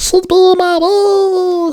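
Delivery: very high, slow, stretched-out voice. Repeating own last words as a joke: Stitch voice. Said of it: "my Stitch voice".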